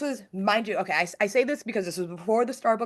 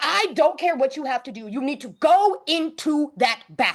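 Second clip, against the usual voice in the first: acted, furious yell, pitched high; 6 semitones higher, 4 dB louder than usual. Retelling a hospital stay, the patient re-enacts her own angry yelling at the doctor. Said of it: "the patient that yelled at the doctor".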